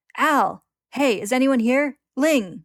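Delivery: very loud, very slow, booming, drawn-out high shout. Wading through wreckage and bones, he shouts out for Al and Ling. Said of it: "he shouts out as he goes".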